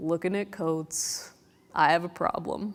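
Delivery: very slow, gloomy, glum, drawn out. Retelling a man with a forlorn look speaking in an Eeyore voice. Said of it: "in this Eeyore voice".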